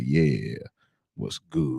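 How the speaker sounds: very low, smooth, deep flirting voice. Showing how they talk when trying to hit on somebody, smooth flirting voice. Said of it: "if I'm trying to hit on somebody, I talk like".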